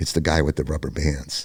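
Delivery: secretive, hushed half-whisper. Retelling what a man said at a police lineup: imitating someone half-whispering. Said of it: "he whispers to me".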